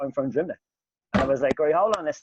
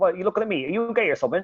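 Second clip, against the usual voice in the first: put-on Bristol accent, higher; 5 semitones higher than usual.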